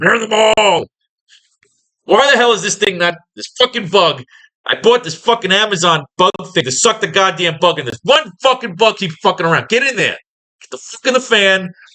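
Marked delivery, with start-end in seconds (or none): 0.0-0.9 full-throated, loud screaming outburst. Recalling a favorite line, imitating the Mad King screaming. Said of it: "the Mad King is just screaming".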